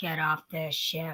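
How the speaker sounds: very low, deep, soft and quiet voice. Asked for a Russian accent, you offer the one you like doing more: a Kathryn Janeway impression. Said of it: "I like doing Catherine Janeway more".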